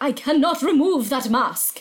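put-on faint, vague hint of German accent. Recapping a story, the speaker quotes the skin guy talking to Carly Beth: vaguely German accent. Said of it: "vaguely German?".

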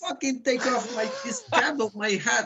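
high-pitched screaming. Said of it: "And I was screaming".

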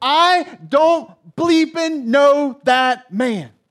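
acted, heated, angry outburst, loud and slow. Retelling Peter denying he knows Jesus: imitating Peter's angry outburst. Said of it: "he gets so angry".

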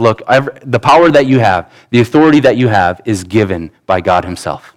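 ordinary delivery

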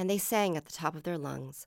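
ordinary delivery, nothing marked

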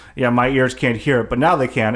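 ordinary talk

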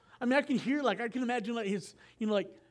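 normal talking voice

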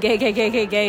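normal talking voice

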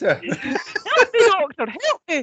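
bad, very high, slow attempt at Scottish accent. Trying the Fraser Hines line again: bad Fraser Hines Scottish accent. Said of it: "I obviously can't do a Scottish accent".

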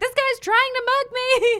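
acted-out scream. Retelling how a tiny woman scared off a mugger, retelling a scream. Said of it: "started screaming".

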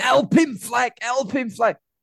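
put-on shouting. Recalling a match, retelling shouting at struggling players, retelling a shout. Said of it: "I just kept shouting".

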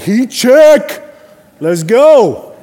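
very high, overflowing joyful cheering yell. A parent recalls leaping off a chair at their daughter's game, retelling a yell. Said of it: "I'm like yelling".

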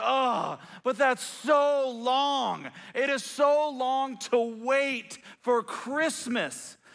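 very slow, fed-up, exasperated, drawn-out delivery. Retelling a daughter's reply about waiting for Christmas: imitating Angelie, exasperated. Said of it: "And she just exasperated".

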